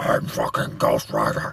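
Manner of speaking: very low, slow, deep, drawn-out gravelly growl. Describing a game character's new voice: imitating Ghost Rider's gravelly demonic voice. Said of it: "He sounds like he's fucking eating gravel".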